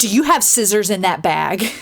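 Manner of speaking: gruff, stern, demanding voice. Retelling how a stern security officer stopped them: imitating a gruff security officer. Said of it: "very gruffly says".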